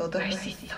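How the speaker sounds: soft, unvoiced whisper.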